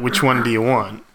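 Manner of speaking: mock deadpan doctor voice. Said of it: "heaps deadpan".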